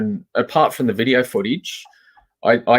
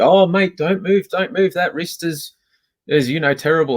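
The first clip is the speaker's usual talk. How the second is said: acted snide smart-aleck sarcasm, pitched up; 6 semitones higher than usual. Speaker retells how a second officer treated them, mocking a sarcastic officer. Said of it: "Just just being sarcastic".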